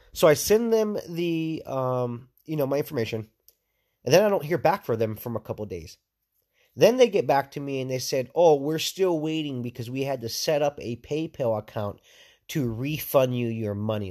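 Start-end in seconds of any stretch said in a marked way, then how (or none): none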